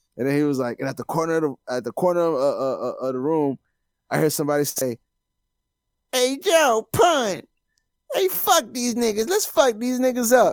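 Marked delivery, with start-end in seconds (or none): 6.1-10.6 squeaky delivery, deliberately bad. Retelling a story, quoting a line in a terrible Mike Tyson accent. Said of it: "my terrible Mike Tyson accent".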